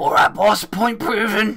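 very high, strangled, choking, squeezed voice. A collared prisoner answers the boss as the collar tightens: choking voice.

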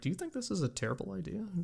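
hushed, high half-whisper under the breath. Imagining costumed fans sitting on the floor talking to each other: imitating people half-whispering. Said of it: "look like they're whispering".

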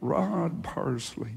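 soft, easygoing, relaxed Texas drawl. Retelling what Brother Copeland said to you about airplanes, in Copeland's Texas drawl. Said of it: "in that Texas drawl".

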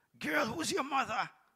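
very high, called-out, questioning shout. Retelling going up to a girl to speak to her, retelling a shout. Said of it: "And I shouted".

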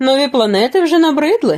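mocking. Devine teases his companions who are nodding off, mocking. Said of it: "насмішкувато озвався Дивайн".

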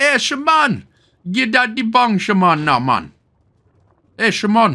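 high Jamaican accent. Joking about how the word shaman sounds: mock jamaican accent.

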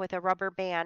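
plain reading voice

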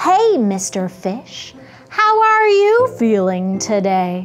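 cheerful, bright, happy clam character voice. Showing how to pretend to be a clam greeting mr. fish: cheerful happy clam voice. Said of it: "pretend to be that cheerful, happy clam".

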